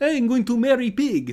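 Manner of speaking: put-on loud, very high froggy puppet voice with Russian accent. Describing a Russian frog pretending to be Kermit: Constantine's Russian-accented Kermit voice. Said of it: "Kermit the Frog with Russian accent".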